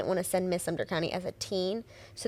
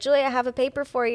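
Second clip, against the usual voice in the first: put-on heavy country accent; 5 semitones higher, 4 dB louder than usual. Retelling what a boyfriend's grandpa says when he hands over papers: heavy country accent. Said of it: "heavy country accent".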